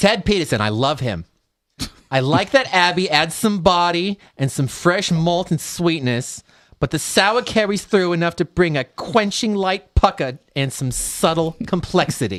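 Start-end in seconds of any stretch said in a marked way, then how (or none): 2.1-12.4 put-on old lady voice, pitched higher.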